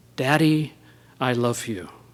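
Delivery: acted-out whisper. Recounting a daughter leaning over her father's bed, retelling a whisper. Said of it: "she whispers in her father's ear".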